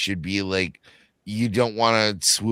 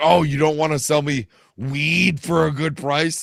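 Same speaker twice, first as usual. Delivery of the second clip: voice raised slightly, a bit loud; 7 semitones higher, 3 dB louder than usual. Showing how to ask someone for weed: a little loud. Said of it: "just get a little loud and be like".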